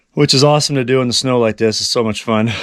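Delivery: ordinary talk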